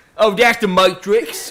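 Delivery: put-on Cockney accent. Joking about a movie quote among friends: Cockney accent. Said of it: "said it in a Cockney accent".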